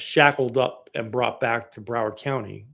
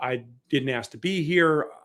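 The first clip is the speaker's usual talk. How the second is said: normal talking voice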